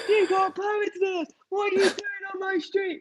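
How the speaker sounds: mock shouting by a man, pitched very high. Retelling how a man came out and shouted at the filming: imitating a man shouting. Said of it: "shouting at us, going".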